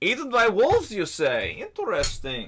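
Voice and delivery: put-on Russian accent, sing-song, high and swooping. In a tabletop game, a character reacts to news of a companion's death; Russian accent. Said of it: "I gotta find my Russian accent real quick".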